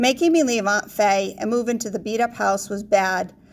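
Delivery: plain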